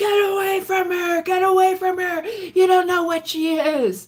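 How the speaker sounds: very high, threatening shrieked scream. Retelling a biker on the phone attacking Tom, imitating someone screaming. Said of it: "Bill screaming".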